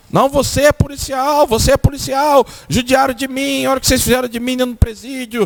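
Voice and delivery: acted out, high, furious angry yelling. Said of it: "E começou a gritar".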